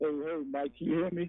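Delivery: muffled voice with a phone-like sound. Greeting and asking whether the other speaker can hear: muffled voice. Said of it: "You sound a little bit muffled".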